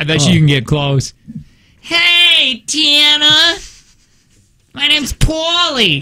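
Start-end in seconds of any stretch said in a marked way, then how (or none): 1.8-6.0 very high, slow put-on New Jersey accent, hey stretched. Showing someone that the accent can be done: a New Jersey accent. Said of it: "that's not bad".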